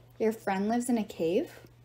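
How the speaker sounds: ordinary delivery, nothing marked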